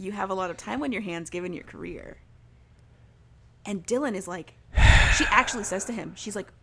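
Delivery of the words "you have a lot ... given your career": normal talking voice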